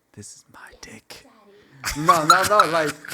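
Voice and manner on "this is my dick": very soft, breathy whisper. Retelling how an ex leaned in close to his ear: imitating a whisper. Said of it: "goes in my ear and just whispers".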